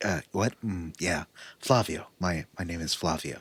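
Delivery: impression, low and halting with ums. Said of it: "That's my, my Jeff Goldblum impression".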